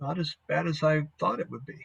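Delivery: quiet, soft, hushed half-whispered aside. Narrating a scene, the speaker voices a woman who steps over to the listener in a half-whisper. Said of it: "and she whispers to you".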